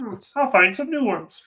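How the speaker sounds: very high-pitched puppet-like frog voice. Acting out a post-credits line for a sequel: Kermit the Frog voice. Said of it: "he's Kermit the Frog all of a sudden".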